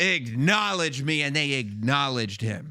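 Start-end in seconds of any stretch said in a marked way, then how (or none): 0.0-1.2 wrestling ring promo voice with a little voice crack. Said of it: "he didn't do it with that little crack".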